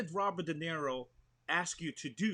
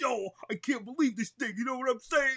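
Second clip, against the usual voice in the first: loud, high-pitched New York accent; 8 semitones higher, 5 dB louder than usual. Recalling that people loved the New Yorker in him, the speaker shows a New York accent. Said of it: "I should talk like this".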